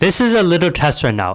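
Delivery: loud, high scream right into the mic. Testing clipping control while talking close to the mic, screaming into the mic. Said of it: "I'm screaming into the mic".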